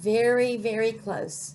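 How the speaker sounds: ordinary delivery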